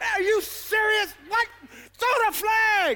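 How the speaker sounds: acted, high, fed-up, outraged yell. Describing watching football when no flag is thrown, acting out fury at the TV. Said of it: "you throwing everything at the TV like".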